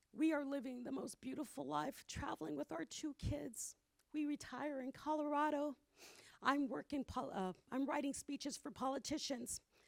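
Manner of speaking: tearful crying voice, words wet with tears. Giving a timed talk to an audience, the speaker goes on, crying. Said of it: "Because I'm like crying".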